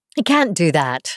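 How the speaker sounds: ordinary delivery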